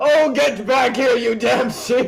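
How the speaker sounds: high-pitched, shrill screaming. Voicing Galagrand yelling at his scattered objects: Galagrand screaming. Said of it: "He's screaming at his objects".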